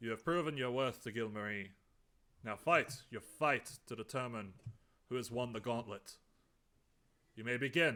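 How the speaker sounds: loud priest voice, booming as across a hall. As game master, voicing the priest who opens the fight: booming priest voice. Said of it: "priest's voice booms across".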